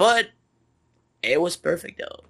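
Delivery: hoarse voice from yelling. Talking about a match after yelling a lot: voice worn out from yelling. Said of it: "as my voice can tell you, I yelled a lot".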